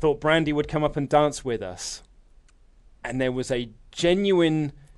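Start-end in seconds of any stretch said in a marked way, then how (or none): 0.0-2.0 mock dry, flat, expressionless deadpan. Retelling a man's deadpan reply to a question.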